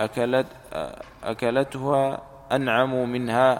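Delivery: ordinary delivery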